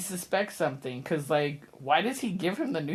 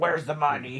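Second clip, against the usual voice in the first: put-on angry voice. Retelling a movie scene where Matt Dillon demands the money: imitating an angry Matt Dillon. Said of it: "He's all mad".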